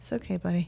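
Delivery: very soft, gentle, soothing reassuring voice. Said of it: "I stood up and went".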